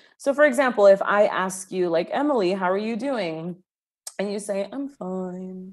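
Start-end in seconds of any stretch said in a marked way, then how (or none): 4.7-5.7 put-on mopey voice, much quieter. Giving an example of the listener saying they're fine, imitating a mopey Eeyore voice. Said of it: "you just sounded from like Eeyore".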